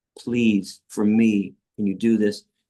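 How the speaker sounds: play-acted, earnest, imploring begging tone. Retelling kneeling before a student and asking her: retelling his own begging. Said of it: "I was begging this religious person".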